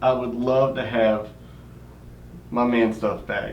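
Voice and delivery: ordinary talk, nothing marked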